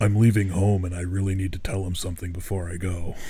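low, deep, intense and dramatic delivery. Retelling a character's words at a mental hospital, intense deep voice. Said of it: "Intense, deep voice".

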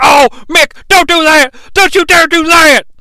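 high-pitched, loud, indignant outcry. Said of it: "J R's indignant".

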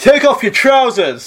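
very high, loud heckling shout. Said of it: "this one guy shouts out".

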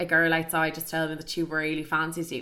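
normal talking voice

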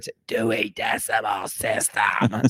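put-on heavy smoker's voice. Recalling the high school librarian explaining the dewey decimal system, imitating a heavy smoker's voice. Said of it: "a heavy smoker explaining it".

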